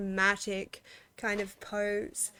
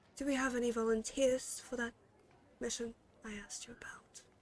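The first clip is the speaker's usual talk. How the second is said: soft, quiet, hushed voice; 2 semitones higher, 8 dB quieter than usual. A woman asks the bartender about mission volunteers in a low, soft voice. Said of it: "starts to speak in a low, soft voice".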